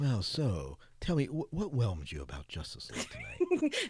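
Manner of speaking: wild, soft, swooping jazz DJ voice. Speaker re-asks the question, putting on a super crazy jazz dj voice. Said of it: "that super crazy jazz DJ voice you're going on".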